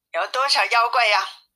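ordinary delivery

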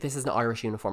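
usual speaking voice

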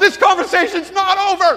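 very high, very loud, shrill yelling. Retelling how a man ran to the door after him: imitating someone yelling. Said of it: "he yells out the door".

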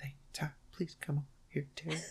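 hushed, barely audible whispered line-reading. Showing listeners how an actress delivers her lines: imitating Louise Lasser whispering. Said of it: "this is what she sounds like".

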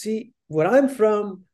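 put-on Syrian Arabic accent. Retell what a man with several jobs told you, in an imperfect put-on Syrian accent. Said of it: "my Syrian accent's not perfect".

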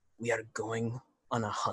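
quiet mutter just under the breath. A character puts a hand on the bar and speaks under his breath. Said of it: "just under my breath go".

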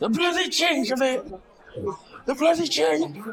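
mock shrill, plummy raving shout, very high. Recounting things a man shouted out, imitating his posh shout. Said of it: "that he shouted out".

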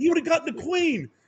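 angry, high-pitched yelling.

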